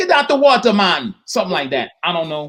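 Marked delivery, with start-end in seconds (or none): 0.0-1.1 put-on Bahamian-accented speech. Acting out lifeguards yelling at people who go too far out, in a put-on Bahamian accent. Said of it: "Bahamian accent".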